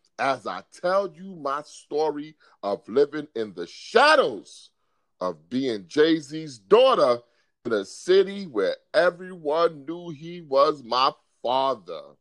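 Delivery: normal talking voice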